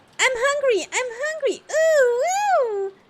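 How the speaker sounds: voice pushed up very high. Reading a story aloud, trying a voice for Maria, high-pitched. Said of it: "my attempt at a Maria high pitched voice".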